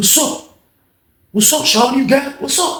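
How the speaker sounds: super aggressive, in-your-face. Retelling how John confronted Sean, imitating John's aggressive demand. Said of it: "Super aggressive shit".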